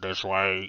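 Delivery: robotic, mechanical machine voice. Voicing a guide creature leading the party: weird mechanical voice. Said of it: "a weird sounded Vox style mechanical voice says".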